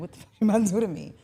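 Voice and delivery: put-on nervous tone. Describing blindfolding a partner, voicing the partner's reply: mock-nervous reply. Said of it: "the more nervous you're gonna get".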